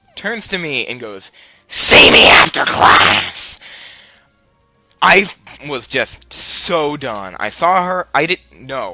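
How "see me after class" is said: furious, very loud, deep, booming, rough demon roar. Retelling a furious teacher's words to a student: imitating a furious demon voice. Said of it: "the demon voice with, like, thr-, that's three different voices in a harmony".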